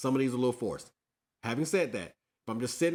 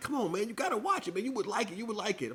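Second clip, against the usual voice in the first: put-on shrill, very high pleading coax; 10 semitones higher than usual. Retelling how people kept urging him to watch it: imitating people begging.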